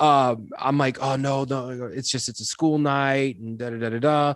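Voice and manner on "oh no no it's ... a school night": put-on stuttering, stammered speech. Retelling an excuse given to the drummer: imitating his own stuttering. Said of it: "I end up stuttering so much in that sentence".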